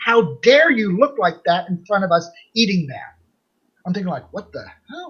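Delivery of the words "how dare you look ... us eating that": mock screaming at full force, top of lungs. Retelling what a woman screamed at the speaker in public, imitating screaming. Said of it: "She starts screaming at the top of her lungs".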